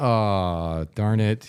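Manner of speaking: put-on heavy sarcasm with a drawn-out aw. Retelling own reaction to a team blowing a close game: imitating own sarcastic remark. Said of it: "just sarcastically".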